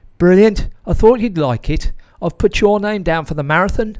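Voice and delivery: put-on thick, broad Brummie accent, loud and high-pitched. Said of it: "in his broad Brummie accent".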